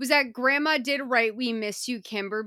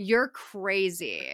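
real, all-out, full-force snarling voice; 3 semitones lower than usual. Recapping a scene where Kim answers a man, imitating Kim snarling. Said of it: "And Kim snarls. And when I say snarls, I mean snarls".

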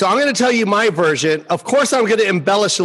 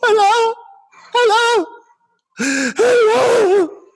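put-on high, sobbing girl's voice, crying and pleading, drawn out. Retelling a phone call from mexico, imitating a girl crying. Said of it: "I hear this girl crying".

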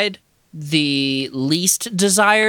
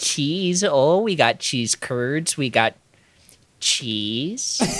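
put-on Wisconsin-style Midwestern accent; 4 semitones lower, 4 dB quieter than usual. A speaker riffs on Wisconsin cheeseheads, Midwest accent. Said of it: "my favorite American accent is a Midwest accent".

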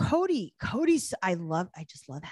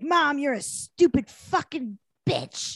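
put-on, drawn-out, high, loud screaming; 6 semitones higher, 5 dB louder than usual. Retelling a screaming fight between a mother and daughter: imitating someone screaming. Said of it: "they're just screaming at each other".

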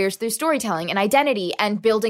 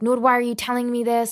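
acted-out frantic, panicked, freaking-out voice; 2 semitones higher than usual. Retelling calling her mother with a bad feeling, imitating mom freaking out. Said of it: "like freaking out".

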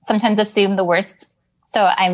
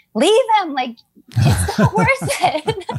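acted-out very high, shrill, sing-song swooping yell; 10 semitones higher than usual. Retelling yelling at the phone during an episode: retelling own yelling. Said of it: "yelling at my phone".

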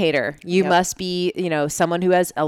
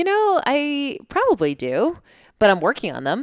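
acted laughter while talking, high and swooping; 7 semitones higher than usual. Recounting a conversation with a man, the speaker retells their own reply: laughing while talking. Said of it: "and I started laughing".

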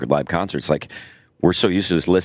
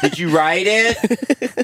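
mock yelling, louder and higher. Retelling how comedians yell at a joke thief: imitating comedians yelling louder. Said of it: "they're gonna yell even louder at you".

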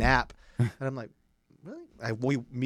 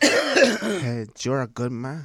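put-on drunk man voice, louder; 3 semitones higher, 7 dB louder than usual. Retelling what a very drunk man kept saying: imitating a drunk man. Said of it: "this guy was so drunk".

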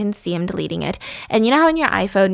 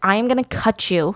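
mock-threatening, menacing tone. Retelling how Liam threatens Jonas while choking him; mock-threatening. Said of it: "threatening him".

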